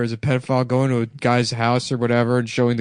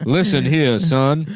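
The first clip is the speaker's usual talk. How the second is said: put-on old-style cartoon character voice; 3 semitones higher than usual. Doing a cartoon character threatening someone: Foghorn Leghorn voice. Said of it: "That's Foghorn Leghorn".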